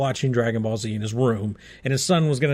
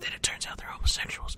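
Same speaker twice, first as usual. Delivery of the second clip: hushed, very quiet whisper under the breath. Speaker drops a quick aside to listeners: whispered. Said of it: "I have to whisper that".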